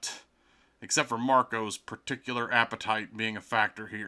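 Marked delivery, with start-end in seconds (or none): none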